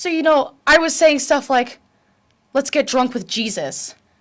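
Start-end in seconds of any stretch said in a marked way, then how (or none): 2.5-3.9 chatty put-on British accent laid over own voice. Retelling an under-the-breath tic during quiet time in church: British accent. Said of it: "and it's always in a British accent".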